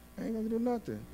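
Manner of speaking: half-swallowed, soft mutter under the breath. Acting out a child's reply to a parent, mumbled under the breath. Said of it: "you hear it under the breath".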